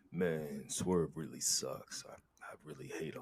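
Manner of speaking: very low, very quiet put-on bass voice. Showing the voice used when talking trash: put-on deeper voice. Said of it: "I just gotta be have a deeper voice, like".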